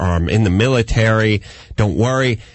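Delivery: normal talking voice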